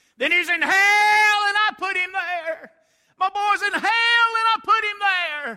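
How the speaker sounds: very loud, very high, shrill shrieking scream. Retelling a preacher's story of a mother who threw up her hands: imitating a screaming mother. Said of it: "threw her hands up in the air and screamed out".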